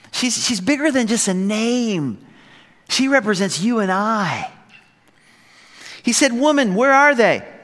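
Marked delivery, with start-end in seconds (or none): 6.3-7.3 mocking, high-pitched, sarcastic little jab. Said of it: "the little sarcasm".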